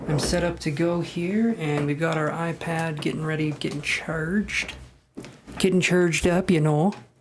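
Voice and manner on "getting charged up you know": loud put-on Minnesota or Wisconsin accent. Setting up an iPad before recording, in a Minnesota or Wisconsin accent. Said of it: "That's my, uh, what is it, Minnesota or Wisconsin accent".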